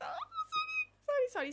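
mock frightened, flustered, very high, drawn-out voice. Retelling a man with a torch ordering them out: imitating own scared apology.

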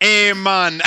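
put-on Jamaican-accented speech. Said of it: "I would pick up the accent".

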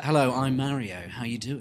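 offhand, tossed-off casual delivery. Retelling the Mario movie trailer's non-Italian voice: imitating Chris Pratt as Mario. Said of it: "He was just like".

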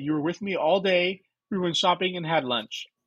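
ordinary talk

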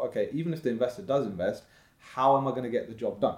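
normal talking voice

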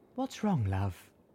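kindly and gently said. Velvet asks the narrator what's wrong, gently. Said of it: "Velvet asked gently".

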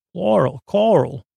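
weak, badly done, put-on Long Island twang. Trying out local words in a bad Long Island accent. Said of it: "That's not a good Long Island accent".

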